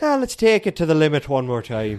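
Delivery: slight put-on Irish accent. Quoting a line for the other speaker to guess the accent, put-on Irish accent.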